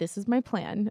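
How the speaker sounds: sarcastic, tongue-in-cheek, knowing delivery. Retelling own words to a friend on a beach walk: imitating own sarcastic line. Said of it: "I always say that kind of sarcastically".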